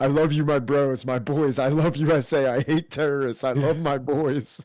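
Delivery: put-on drunk Russian accent. Imitating how drunk Russian people sound: imitating drunk Russian speech.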